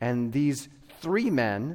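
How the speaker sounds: three stressed, drawn out slow with rising pitch.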